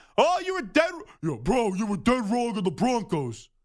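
very deep, burly big-guy voice. Recalling a Broncos fan telling the speaker his prediction was wrong, imitating Anthony Gallo. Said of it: "a deep, deep voice".

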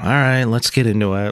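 unenthused, low-energy and flat. Starting to go through listener messages, sounding unenthused. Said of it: "You sound so enthused".

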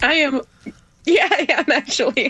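high, teary crying voice. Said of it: "Are you crying, honey?".

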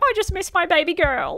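high, mock-weepy, whining fake sad dad voice. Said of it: "so he had to be like".

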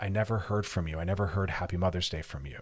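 ordinary talk

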